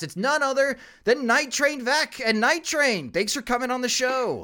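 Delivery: high, lively radio announcer voice.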